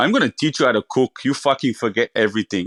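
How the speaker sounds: put-on hefty, burly Italian head-chef-style accent. Recalling the man who took him under his wing to teach him cooking, big burly Italian accent. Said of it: "in his big, um, burly Italian accent".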